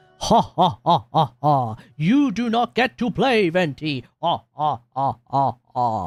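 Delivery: put-on alien boss voice, slow and laughing. Retelling what another person said to him, in a fake Jabba the Hutt accent. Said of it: "the fake Jabba the Hutt accent".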